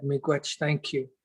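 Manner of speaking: usual speaking voice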